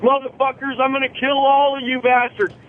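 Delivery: mock tough, aggressive action-hero scream, high-pitched. Retelling a dream of screaming at terrorists in a plane cockpit, screaming. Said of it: "I'm screaming at the terrorists".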